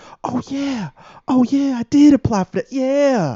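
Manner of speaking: very high, eager, drawn-out hopeful lilt. Imitating job applicants answering a call about an interview: imitating a hopeful applicant. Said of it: "the little hopefulness in your voice".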